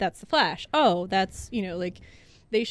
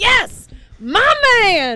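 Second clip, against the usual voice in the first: very loud, shrill, whooping, swooping cheer of delight; 12 semitones higher, 8 dB louder than usual. Describing a man in a silent theater suddenly reacting, retelling his yell. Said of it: "he just yells".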